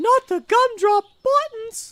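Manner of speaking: squeaky little cookie-man character impression. Quoting a cartoon line after a voice comparison: Gingerbread Man from Shrek voice. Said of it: "sound like the gingerbread man from Shrek".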